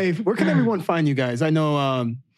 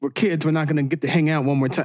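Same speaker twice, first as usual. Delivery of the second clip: ordinary delivery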